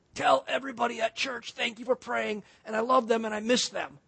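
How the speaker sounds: soft, faint, weak pained voice. Retelling what a man in pain on the couch said, imitating someone in pain. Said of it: "he's kind of talking like this".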